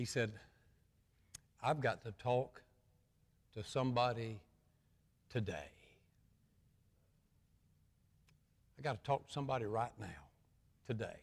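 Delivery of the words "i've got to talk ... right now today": put-on soft, trembling voice. Retelling a caller urgently asking to talk: imitating a trembling voice. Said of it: "with a trembling voice".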